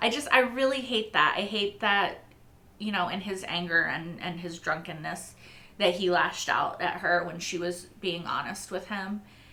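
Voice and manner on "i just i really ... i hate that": high voice, fighting and holding back tears. Talking about a man who lashed out at a dying woman, holding back tears. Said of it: "I'm trying not to cry".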